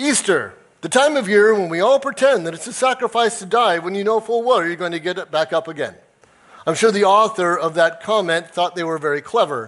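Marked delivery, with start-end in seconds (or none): 0.0-5.9 mocking, smug, know-it-all sarcastic tone. Quoting a comment posted under the church schedule: imitating a sarcastic comment. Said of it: "somebody sarcastically this year threw up".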